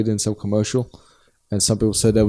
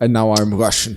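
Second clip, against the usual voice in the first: put-on Scottish accent, movie-star voice. Joking about an actor playing a Spaniard: Sean Connery impression. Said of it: "there's only one Sean Connery".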